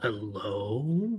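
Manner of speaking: separate, distinct creature voice, drawn-out. The narrator voices a creature greeting the players after its eyes blink: different creature voice. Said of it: "In a different voice, not Preto's voice".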